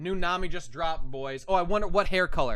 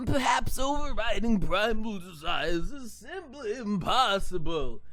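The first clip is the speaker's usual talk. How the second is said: put-on slow, unhurried old man drawl; 9 semitones higher than usual. Reading a character's line aloud: old man voice. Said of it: "Read an old man voice".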